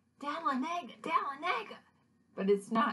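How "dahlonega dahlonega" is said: acted-out yelling, much higher pitch. Retelling a dream where he didn't get the town's name, retelling a yell. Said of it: "then I start yelling".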